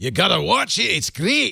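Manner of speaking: high-pitched put-on Scots accent. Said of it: "I'm gonna start talking with a Scots accent".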